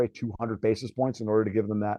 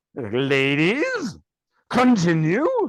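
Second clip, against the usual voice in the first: loud, swooping, drawn-out "ladies", then pleased tone; 5 semitones higher, 5 dB louder than usual. Retelling a Babylon Five scene with arguing wives: imitating Londo with a big smile. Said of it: "with a big smile on his face".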